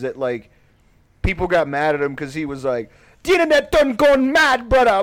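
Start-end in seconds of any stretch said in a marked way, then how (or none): 3.2-5.0 loud, very high-pitched Jamaican patois, belted out. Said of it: "that's like the Jamaican dialect that he does".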